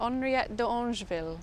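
name given French pronunciation, put-on French accent. Answering a co-host's question about a climber's name, french accent. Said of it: "in my French accent there".

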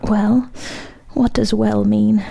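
faint, weak, feeble whisper. The maestro, about to faint, answers the Count in a faint whisper. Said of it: "faintingly whispered".

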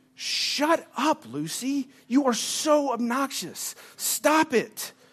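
hushed, quiet yell. Retelling yelling at the barking Lucy at 3:30 a.m., retelling a quiet yell. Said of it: "I was quietly yelling".

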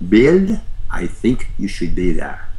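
put-on, swooping German Swiss accent. Speaker quotes Elizabeth's reply to his request: Elizabeth's German Swiss accent. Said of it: "she said in her German Swiss accent".

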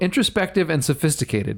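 usual speaking voice

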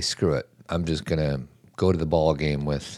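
ordinary delivery

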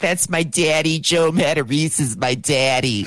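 put-on Philadelphia accent. Imitating a woman who was on the podcast, thick Philly accent. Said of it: "she's got this thick Philly accent".

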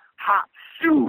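high-pitched yell. Retelling a story of a little guy at a fight: imitating someone yelling. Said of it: "pissing into his hands and yelling".

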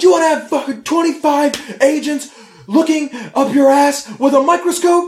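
put-on, very high, shrill, furious yelling rant. Retelling how a man acting as a surprise customs auditor lets office staff have it: imitating a furious rant. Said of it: "he just goes fucking ate shit and is like".

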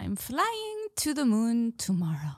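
loose, weak attempt at a Jamaican accent. With the others waiting to hear it, the speaker tries a Jamaican accent. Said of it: "we need [name]'s Jamaican".

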